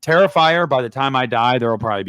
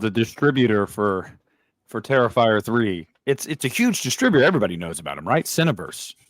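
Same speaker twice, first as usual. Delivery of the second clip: mock-serious, sarcastic hype, played straight. Talking about the distributor of an independent horror film: sarcastic. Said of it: "I'm being sarcastic".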